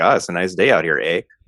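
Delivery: stock put-on Canadian accent, ending on "eh". Showing how Americans try to sound Canadian: mock Canadian accent. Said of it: "when people try and sound Canadian".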